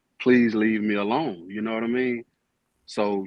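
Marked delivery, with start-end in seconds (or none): 0.2-1.5 put-on begging, pleading tone. Retelling how they asked someone to stop: imitating own begging plea. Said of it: "begging and pleading".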